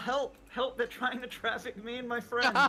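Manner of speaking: urgent, desperate calling out at full voice. Opening the front door in character and calling out: yelling for help. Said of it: "I'm gonna yell".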